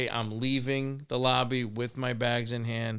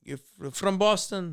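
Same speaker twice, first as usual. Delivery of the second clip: bad fake French accent, pitched up; 8 semitones higher than usual. Retelling what the wife said to the speaker, bad put-on accent. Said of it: "No, that's not a good accent".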